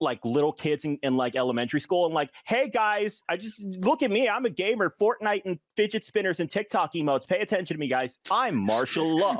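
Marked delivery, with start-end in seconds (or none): 2.4-9.4 put-on high-pitched middle-aged voice, clueless, trying to sound cool. Mocking a middle-aged boomer talking to elementary school kids: imitating a middle-aged boomer. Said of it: "middle-aged boomer walks up to".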